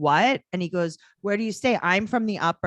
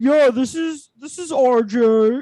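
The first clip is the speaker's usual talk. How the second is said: mock boy's fake man voice, louder; 7 semitones higher, 7 dB louder than usual. Describing how young boys sound when they try to make a man voice, imitating it. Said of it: "when they try to make a man voice".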